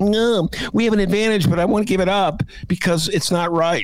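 parody voice going way up, squeaky. Mocking confused Democrats in Illinois: imitating Democrats. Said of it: "you have Dems going".

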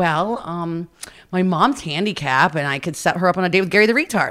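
plain

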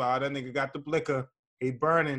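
normal talking voice

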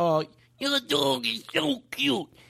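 awful, goofy, high, creaky silly put-on voice. Going up to someone's dog, terrible put-on voice. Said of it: "do the worst voice in the world".

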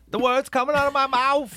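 squeaky voice, pushed to very top of range. Imitating a film actor's voice: Chris Tucker's very high voice. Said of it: "the highest voice ever".

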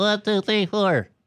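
very tight, squeezed, constricted voice. Showing others a voice, with a case offered as a mouthpiece: very squeezed voice. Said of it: "it's like a very squeezed kind of voice".

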